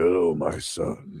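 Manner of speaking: deep, gravelly, raspy storyteller voice. Imitating YouTube narrators reading a story: deep raspy narrator voice. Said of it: "raspy, deep voice narrators".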